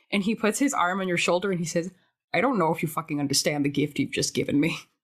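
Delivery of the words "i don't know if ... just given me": flat, expressionless deadpan, lower pitch. Voicing a character who puts his arm on a shoulder: deadpan. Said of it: "completely deadpan for a solid ten seconds".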